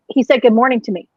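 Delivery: normal talking voice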